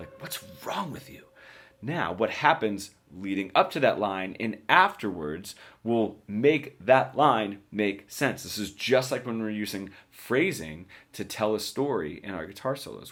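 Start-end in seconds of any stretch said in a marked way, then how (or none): 0.2-1.2 hushed, very quiet, barely voiced whisper. Showing how one movie line can be said differently: whispering. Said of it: "I could whisper it".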